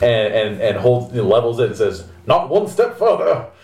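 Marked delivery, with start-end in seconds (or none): 2.3-3.4 put-on aristocratic accent at a much higher pitch. Narrating a scene, voicing a man leveling a dueling pistol: aristocratic Virginian accent. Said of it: "aristocratic Virginian or Marylander kind of".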